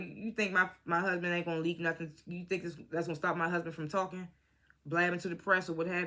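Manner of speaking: usual speaking voice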